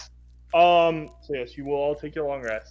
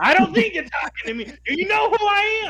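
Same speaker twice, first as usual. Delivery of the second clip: very high, loud, shrill, brash tough-guy yell. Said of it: "Kyoma is not saying this softly".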